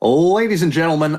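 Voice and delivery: put-on, big stage announcer delivery. Trying to start up an announcer voice to open a bit: announcer voice. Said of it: "let's see if I can start this announcer voice".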